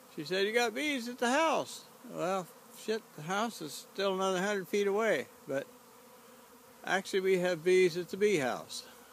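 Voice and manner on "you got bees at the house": high, loud hollered call. Recounting being called to while burning weeds in the garden, retelling a holler. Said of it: "Patti started hollering at me".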